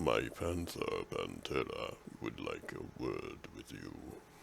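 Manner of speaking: very low, deep, hushed forest-giant voice. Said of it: "who is an eight-foot furbolg, we drop our voice".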